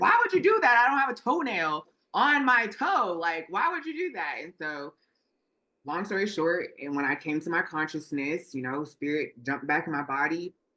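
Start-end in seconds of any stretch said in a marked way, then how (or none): 0.0-4.4 mock very high, swooping, shouted protesting tone. Retelling their spirit yelling at a doctor squeezing their toe, imitating own past yelling. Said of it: "my spirit body's like yelling at her".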